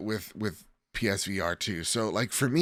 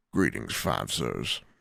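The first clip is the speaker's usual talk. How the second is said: rough, creaky put-on voice; 12 semitones lower than usual. Reading out a listener's question, doing on purpose the put-on voice a critic hates. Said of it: "I'm doing the voice that, that the two-star guy hates just on purpose now".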